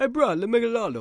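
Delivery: very high, loud Hawaiian Pidgin speech. Showing how the line would sound from Hawaii, in Hawaiian Pidgin accent. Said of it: "That was Pigeon Talk".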